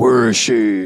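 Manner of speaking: serious, dark, grim hero voice. Picturing Freakazoid as a dark, serious character, Nolan Batman voice. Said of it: "talking like the Nolan Batman".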